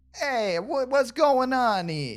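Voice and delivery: put-on Italian accent. Speaker trying out a voice, in a stereotypical Italian accent. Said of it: "Italian type of accent".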